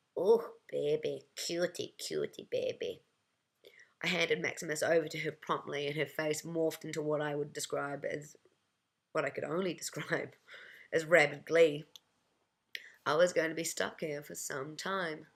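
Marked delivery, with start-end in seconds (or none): 0.2-3.0 put-on very slow, drawn-out, smoky Russian-accented cooing. Retelling an old woman's greeting, imitating cooing russian accent. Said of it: "she cooed in a smoke-laden Russian accent".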